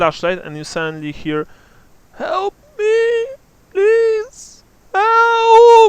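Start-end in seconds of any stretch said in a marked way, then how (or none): 2.2-5.9 put-on very high, very loud, very slow old woman voice. Game master voicing someone calling for help from a hole, in an old woman's voice. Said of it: "You hear an old woman's voice".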